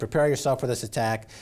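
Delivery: ordinary delivery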